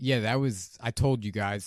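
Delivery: normal talking voice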